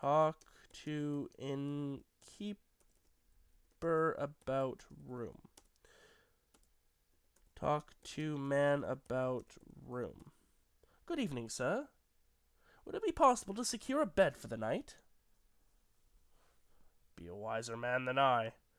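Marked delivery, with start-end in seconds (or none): 11.0-14.9 put-on brisk, lilting old-fashioned courteous delivery. Voicing a traveling merchant in a game, asking the innkeeper for a room: Owen Somerset character voice. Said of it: "Owen Somerset, a traveling merchant, / was on his way back to his wife and family in London, / was on his way back to his wife and family in London, / Faith, 'tis an evil storm that blights the sky to".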